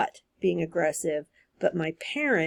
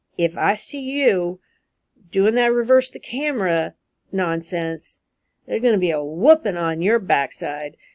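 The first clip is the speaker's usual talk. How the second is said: bad, pathetic put-on Southern accent, pitched up; 5 dB louder than usual. Quoting a parent's video warning her kid, in a bad Southern accent. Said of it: "forgive my really, really pathetic Southern accent".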